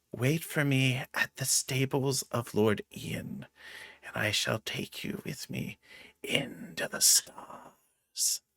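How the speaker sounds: very soft, hushed, close whisper. In character, slipping her money and bracelet into a man's pocket, whispering in his ear. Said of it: "I'm going to whisper in his ear".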